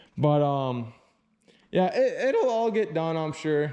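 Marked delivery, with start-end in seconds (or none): 2.0-2.7 voice breaking and cracking mid-line. Wrapping up a video about prepping and painting, the speaker has a voice crack. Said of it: "And that was a voice crack".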